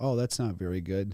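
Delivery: calm, soothing, low, soft, unbothered voice. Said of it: "you seem like one of those people where".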